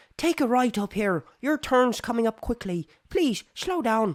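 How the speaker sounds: put-on high-pitched Irish accent. Driving with the phone on Bluetooth, doing the Irish Siri voice. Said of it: "I have my voice for my iPhone Siri as Irish".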